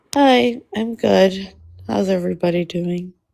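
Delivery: sounding sad. Greeting the others when called on: sounding sad. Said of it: "You sound sad".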